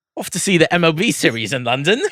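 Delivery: put-on British accent. Joking about going to the MLB London series: put-on British accent. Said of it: "you have a good British accent".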